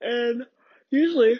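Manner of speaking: talking while yawning. Telling a story about waiting at a counter, yawning while talking. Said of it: "mind my yawning".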